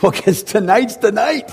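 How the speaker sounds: mock eager, excited, very high-pitched burst. Retelling a man in the back who raised his hand: imitating an excited guy. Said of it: "he's all excited".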